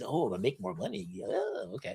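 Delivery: hushed, very soft, greedy, swooping sing-song. Acting out a CEO who wants more money: put-on greedy Smithers voice. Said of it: "he says with his greedy little things".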